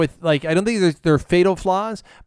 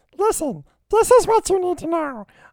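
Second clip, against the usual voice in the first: put-on very high-pitched cartoon kid voice; 13 semitones higher than usual. Giving a plot explanation done as Bobby from Bobby's World. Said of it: "I will do the explanation as Bobby from Bobby's World".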